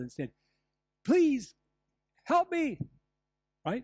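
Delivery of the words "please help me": high, loud yell. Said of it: "I could have simply yelled".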